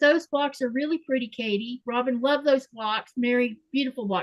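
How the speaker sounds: normal talking voice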